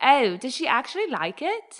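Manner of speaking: clumsy, sing-song, put-on British accent. Retelling a mom's reply at dinner, on request: bad put-on British accent. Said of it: "Can you do it in her accent".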